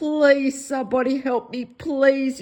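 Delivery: acted-out earnest, begging, imploring tone. Retelling own earlier video where pleading for help: imitating own past pleading. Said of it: "I was pleading".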